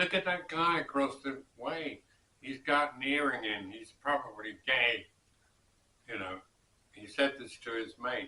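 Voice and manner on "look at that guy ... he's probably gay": play-acted, blunt, loud, carelessly carrying remark. Retelling an American on a Berlin train talking to his mate, in a loud voice. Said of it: "in a loud voice".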